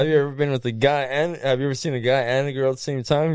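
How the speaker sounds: ordinary talk, nothing marked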